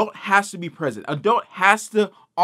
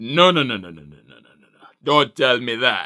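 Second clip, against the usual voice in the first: very low, deep put-on Jamaican accent voice; 8 semitones lower than usual. Retelling how a woman cut him off about returning games, imitating a Jamaican accent. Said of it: "Why does she sound like a Jamaican witch doctor?".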